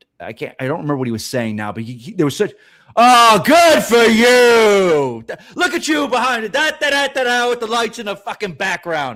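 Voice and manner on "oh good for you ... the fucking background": very loud, high, slow rant, "you" stretched.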